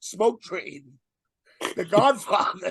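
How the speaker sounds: laughing through words while talking. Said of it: "I can't even say it without laughing".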